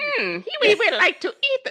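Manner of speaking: very high, swooping puppet creature voice, pitched way up. Showing how a Skeksis sounds, unlike another voice: high-pitched Skeksis voice. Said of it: "Skeksis are far more higher pitched".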